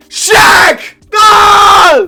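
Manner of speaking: very loud, drawn-out shouting, stretched ah. Reacting to picking Shaq at number twenty-six: yelling. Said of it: "I really gotta stop yelling like this".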